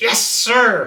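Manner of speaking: pointedly sarcastic, loud and high-pitched. Retelling a team member's reply to an instruction; imitating a sarcastic 'Yes, sir'. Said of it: "real sarcastic like".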